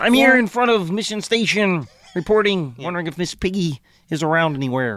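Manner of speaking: put-on frog puppet character voice. Reporting in front of Mission Station as Kermit the Frog: Kermit the Frog voice. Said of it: "Yes, Kermit the Frog".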